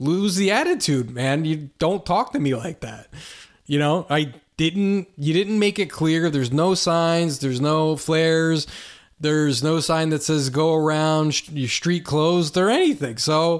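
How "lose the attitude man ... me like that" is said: ordinary delivery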